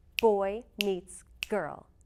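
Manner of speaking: put-on stress on boy, meets, girl. Showing learners the sentence rhythm: stress on BOY, MEETS, GIRL. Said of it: "They all get stressed".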